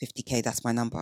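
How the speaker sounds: mock-firm tone. Speaker imitating women stating their salary number, imitating a firm, non-negotiable tone. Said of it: "it's not negotiable, do not try and get me down".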